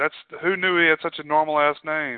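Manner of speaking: normal talking voice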